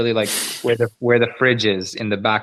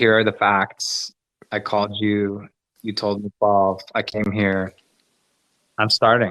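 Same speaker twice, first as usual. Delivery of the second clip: cool, calm, collected, even-keeled delivery. Retelling their own reply to the manager: imitating own calm reply. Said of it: "I'm being calm and collected".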